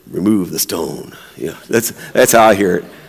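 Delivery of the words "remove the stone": low, gravelly tough-guy voice. Imagining someone walking up to a tomb: Clint Eastwood voice. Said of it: "kind of like with a Clint Eastwood voice".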